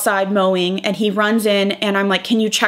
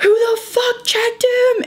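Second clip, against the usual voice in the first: mock blown-gasket furious scream, very high-pitched; 14 semitones higher than usual. Retelling a confrontation with the vet, speaker voices Ian's outburst, imitating Ian screaming. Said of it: "he's like screaming".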